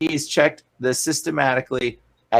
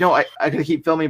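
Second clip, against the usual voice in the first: ordinary delivery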